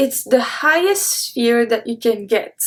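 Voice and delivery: ordinary talk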